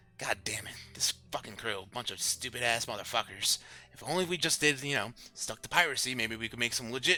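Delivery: muttering and grumbling under breath. Voicing a gnome boatswain coming downstairs: muttering to himself. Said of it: "you hear him kind of muttering to himself".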